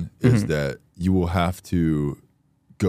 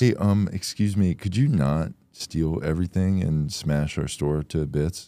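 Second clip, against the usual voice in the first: mock-polite, overly nice tone. Continuing the joke of a guard politely asking a shoplifter: mock-polite asking nicely. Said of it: "if they asked nicely".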